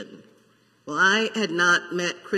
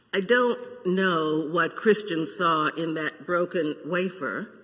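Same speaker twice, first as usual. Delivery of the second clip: ordinary talk, nothing marked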